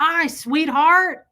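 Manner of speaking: hoarse, raspy, very loud voice. Retelling a dream in which Fred greets the speaker: Fred's raspy loud voice. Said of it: "I heard his raspy, loud voice".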